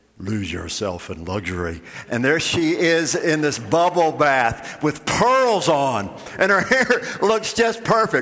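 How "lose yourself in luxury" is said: very low, deep, soft commercial announcer voice. Retelling a bath commercial, the speaker voices its announcer in a deep announcer voice. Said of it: "announcer with this deep voice saying".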